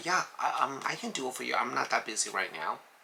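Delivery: modest, understated, low-key delivery. Offering to do something for someone, in a modest low-key tone. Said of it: "You need to play a low key".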